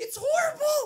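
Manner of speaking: horrified high, loud, slow outcry.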